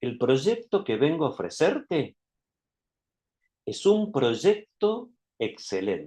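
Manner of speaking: deliberate pauses so each phrase lands. Tip on letting a sentence reach the listener: deliberate pauses between phrases. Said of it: "Esas pausas hacen que la, la idea vaya entrando en la cabeza de la otra persona".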